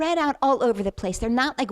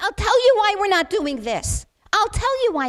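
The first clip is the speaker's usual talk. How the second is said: high, anguished screaming, sobbing through words; 10 semitones higher, 5 dB louder than usual. Quoting another man's reply to his own question; imitating screaming and crying. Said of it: "and he's screaming and crying".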